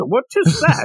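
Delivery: very high-pitched, put-on Irish accent. Quoting a man who knows nothing about art, in an Irish accent. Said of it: "That's my Irish accent".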